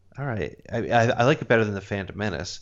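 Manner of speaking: ordinary talk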